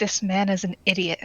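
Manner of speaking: hushed, private half-whispered tone. Turned away from a man, a character leans to a companion: half-whispering. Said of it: "I'm just going to whisper over to him".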